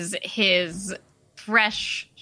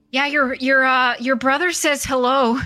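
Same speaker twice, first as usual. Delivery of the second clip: trembling, shaky, high voice straining to sound brave; 5 semitones higher, 4 dB louder than usual. Voicing a character trying to sound brave: shaky attempt at a brave voice. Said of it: "in his best approximation of a brave voice that you can tell is, like, shaking a little bit".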